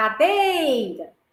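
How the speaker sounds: cadeira called out, lingering on dei. Teaching how to find the stressed syllable, calling the word: lengthened middle syllable 'dei'. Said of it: "Como se eu estivesse chamando a palavra. ... Onde eu demorei um pouco mais, no meio".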